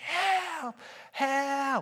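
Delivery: very high, loud screaming cry.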